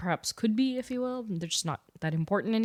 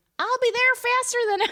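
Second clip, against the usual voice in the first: loud, high-pitched Southern accent; 8 dB louder than usual. Asked to try Sandy Cheeks, the speaker attempts the voice: Sandy Cheeks Southern accent. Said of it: "what if we do Sandy Cheeks?".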